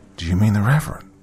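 ordinary delivery, nothing marked

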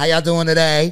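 very loud, full-voiced delivery. Retelling how the front desk girl talked: imitating Shay. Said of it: "she talked her".

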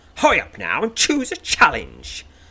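stern snap with swooping pitch. Kelmark's voice calls out of the fog to the listener: stern snap.

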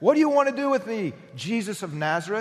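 high-pitched screaming cry. Acting out a possessed man crying out to Jesus: imitating a scream. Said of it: "he's, like, screaming".

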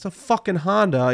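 put-on broad New York accent. Speaker retells a video guy rolling up in a Subaru, thick New York accent. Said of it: "He has like some thick New York accent".

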